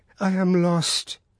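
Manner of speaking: high, murmured, inward voice. Narrating the mother as the prosecutor raises her after the official's promise, murmured. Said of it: "she murmured".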